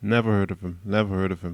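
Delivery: bone-dry, tongue-in-cheek, deadpan sarcasm. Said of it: "That's sarcasm".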